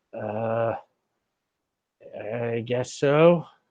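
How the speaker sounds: trembling, nervous, hesitant, very slow and drawn-out reply. Voicing a nervous, sweaty character answering a question: nervous and trembling. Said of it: "he looks very nervous and sweaty".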